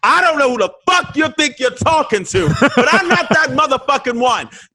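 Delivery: acted angry outburst. Retelling a fight with someone on stage: retelling an angry outburst. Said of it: "I just went off".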